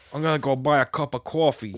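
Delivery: put-on New York accent. Mimicking a man whose speech sounds a bit New Yorky, New York accent. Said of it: "it almost sounds like a bit New Yorky".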